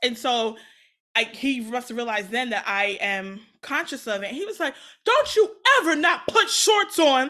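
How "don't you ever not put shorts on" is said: shrill, very high, very loud, comforting fatherly yell. Retelling a parent's reaction to not wearing shorts: imitating dad yelling. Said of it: "yelling at me".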